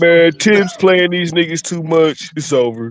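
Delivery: griping, complaining tone of voice. Retelling what LB said about the Knicks: imitating LB. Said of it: "that sound like L B".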